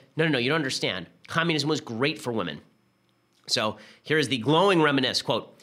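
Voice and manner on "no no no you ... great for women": usual speaking voice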